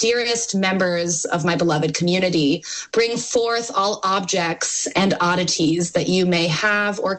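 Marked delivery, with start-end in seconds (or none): none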